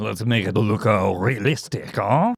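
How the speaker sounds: put-on French accent, slow and drawn out. Voicing a character's line while retelling a story: French accent like Lumiere. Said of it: "It's a French impersonation".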